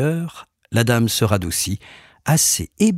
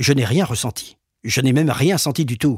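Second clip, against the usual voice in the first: put-on curt, dry delivery. Speaker recounts a lady's answer after a session, retelling a curt, dry reply. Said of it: "m'a répondu sèchement".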